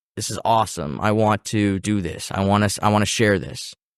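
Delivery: ordinary talk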